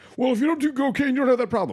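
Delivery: very high, shrill, angry blustering man's voice. Arguing about sentencing policy, pretending to be an angry right-wing guy.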